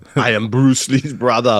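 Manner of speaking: put-on high Austrian accent. Retelling a story, speaking as Bruce Lee's brother in an Arnold Schwarzenegger Austrian accent. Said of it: "Bruce Lee's brother has an Austrian accent".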